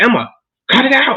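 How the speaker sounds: put-on high, stretched-out voice. Retelling a woman telling off a child in the next room, slightly raised voice. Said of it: "raise her raise her voice a bit".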